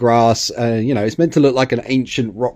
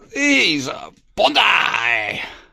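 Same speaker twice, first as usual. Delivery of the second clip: bad put-on old karate master voice, higher; 7 semitones higher than usual. Showing off bonsai-style model trees, terrible Miyagi impression. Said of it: "It's a terrible impression of, of Miyagi".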